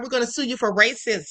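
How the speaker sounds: normal talking voice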